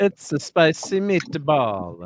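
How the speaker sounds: slow, exaggerated mock Italian accent.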